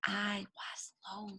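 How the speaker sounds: very quiet, gentle, soft, hushed small voice. Reading a story aloud, showing listeners how to say Big Wolf's line, in a very soft voice. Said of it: "Can you say that in a very soft voice?".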